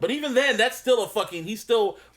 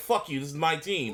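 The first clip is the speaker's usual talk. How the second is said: mock defensive tone, lower and quieter; 4 semitones lower, 4 dB quieter than usual. Retelling a coach's press conference answer, imitating a defensive tone. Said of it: "he he he sounded defensive".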